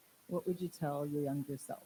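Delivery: ordinary delivery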